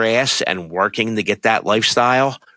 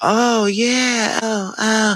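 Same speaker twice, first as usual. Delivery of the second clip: put-on thirteen-year-old girl voice, higher pitch; 12 semitones higher than usual. Imitating Kim Kardashian on a Hulu show: Kim Kardashian voice like a young girl. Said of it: "she sounds like a fucking thirteen-year-old girl".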